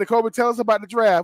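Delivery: ordinary delivery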